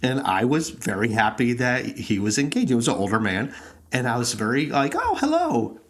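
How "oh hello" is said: very high, startled, surprised voice. Retelling own reply to a stranger's greeting in line: imitating own surprised hello. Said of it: "I was surprised somebody was engaging".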